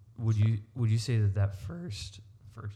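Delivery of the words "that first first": voice cracks and breaks mid-phrase. Asking a question about a first college ministry: voice cracking. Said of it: "crap, my voice is cracking".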